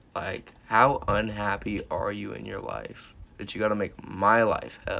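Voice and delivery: ordinary talk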